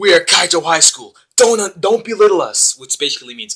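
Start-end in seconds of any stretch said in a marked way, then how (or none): 0.0-2.8 grand, rallying, loud, raised, big and proud delivery. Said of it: "he says it with this epic quote".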